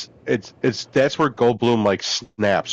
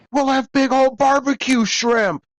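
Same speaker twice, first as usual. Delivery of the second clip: very high hollered yell; 14 semitones higher than usual. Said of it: "out of the open door in the car yelling at him".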